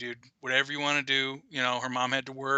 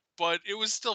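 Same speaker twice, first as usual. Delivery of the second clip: ordinary delivery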